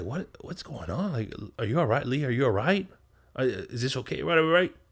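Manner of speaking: nervous, unsure, flustered male voice. Retelling a scene where a man checks on his partner: imitating a timid, unsure man. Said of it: "He's acting like a punk".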